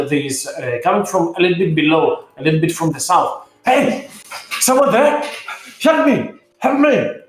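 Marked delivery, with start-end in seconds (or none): 3.6-6.9 very high dwarf voice calling out. Narrating a scene to players, voicing a trapped dwarf behind the passage, dwarf calling for help. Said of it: "You hear a dwarven voice behind there".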